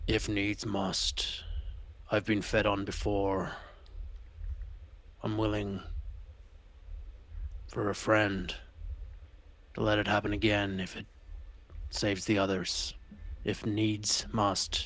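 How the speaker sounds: very soft, slow, quiet aside. Speaking in character so only Gully can hear: said quietly. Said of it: "I'm gonna quietly say".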